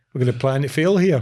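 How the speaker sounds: ordinary talk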